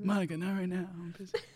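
preoccupied, distracted, dismissive tone. Joking about Bill Clinton watching Space Jam: Bill Clinton impression. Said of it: "he was doing Bill Clinton trying to focus on Space Jam".

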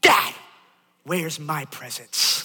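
acted-out cross, angry child voice. A father retells what his youngest child said at a party, imitating an angry child. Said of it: "And he looks at me just angry".

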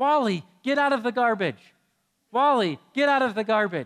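put-on childlike shouting, high and loud. Parent retelling their daughter yelling at a dog in the garbage: imitating daughter yelling. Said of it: "my daughter's yelling".

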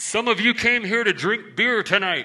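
high street preacher shouting through a bullhorn. Recalling a preacher's fire and brimstone sermon, retelling him shouting through the bullhorn. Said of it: "shouting through the bullhorn".

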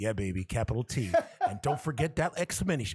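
put-on sultry voice. Spelling out a name letter by letter as a joke, mock-sensual voice. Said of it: "I want to be all sensual".

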